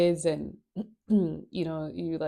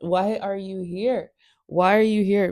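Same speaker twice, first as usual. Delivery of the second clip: mock snapping, louder and higher; 4 semitones higher, 5 dB louder than usual. Retelling a Bible story where the widow snaps at the man of God, mock snapping. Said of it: "She snaps at Eliza".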